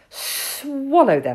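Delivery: hissing, hissed delivery. Hissing Sid answers a question, hissed. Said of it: "hissed Sid".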